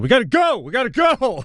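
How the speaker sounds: acted, very high-pitched shouted voice. Retelling how the passenger next to them on a flight yelled: imitating someone yelling. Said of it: "the guy next to me yells out".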